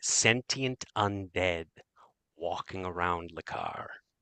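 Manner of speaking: voice dropped low to a hush. A woman speaking to a parent about his son lowers her voice again. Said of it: "she lowers her voice again".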